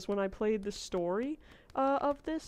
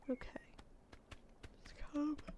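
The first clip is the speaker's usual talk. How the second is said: soft, breathy whispered mumble through a yawn; 5 semitones higher, 14 dB quieter than usual. A sleepy streamer, streaming all day, talks to viewers while yawning. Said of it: "Sorry, I'm yawning".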